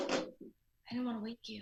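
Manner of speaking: hushed, whispering voice. Calling late at night, explaining why the call came late: whispering. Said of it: "What are you whispering for?".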